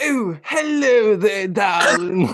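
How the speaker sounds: put-on British accent, high and very slow. Asked for their best British impression: put-on British accent. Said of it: "you gotta give me your best British impression now".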